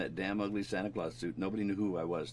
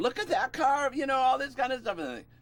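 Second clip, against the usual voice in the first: high, loud radio DJ announcer patter; 8 dB louder than usual. Recalling disc jockeys heard on a long drive, the speaker imitates them: high-pitched radio DJ voice. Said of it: "these really high high voices".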